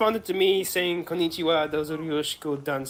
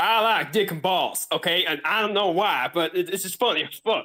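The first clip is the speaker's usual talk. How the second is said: put-on general American accent. Asked to do an American accent, the speaker improvises a line in an American accent. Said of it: "do an American accent".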